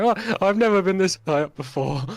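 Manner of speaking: high, loud, panicked terrified cry. Narrating the climb, the storyteller voices Molman holding on for dear life, terrified. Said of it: "holding on for dear life, going".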